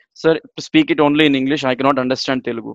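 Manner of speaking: usual speaking voice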